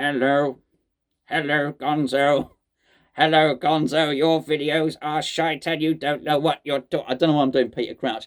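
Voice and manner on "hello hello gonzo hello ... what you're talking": flat, slow, mechanical robot voice. Speaker agrees to do the hello in the robot voice: robot voice. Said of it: "Why not do the hello in the robot voice?".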